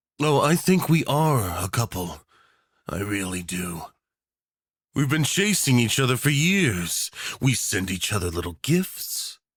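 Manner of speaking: playful, obsessive, flirty teasing tone. A dictator tells the war photographer listener on their anniversary, flirty and teasing. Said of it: "Tags:[M4A][Enemies to Lovers?][Extreme Yandere Dictator Speaker][War Photographer Listener][VERY Yandere][Delusional][Flirting][Teasing][Dinner Date?][Unwilling]to[Begrudgingly Willing][VERY Spicy][Do".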